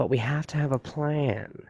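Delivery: small, mousy, overeager voice trying too hard. Complaining about the DC shows, quoting a line that breaks immersion: imitating a mousy, trying-too-hard voice. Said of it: "he has that mousy thing like uh like he's trying too hard".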